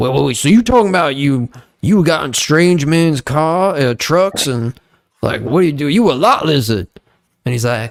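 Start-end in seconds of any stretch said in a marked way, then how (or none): 0.0-6.9 blunt, abrupt tone, cutting in. Retelling how Shay Shay questioned a guest: imitating Shay Shay. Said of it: "And then Shay Shay'd be like".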